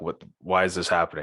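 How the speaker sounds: normal talking voice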